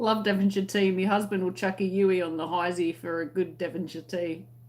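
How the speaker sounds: normal talking voice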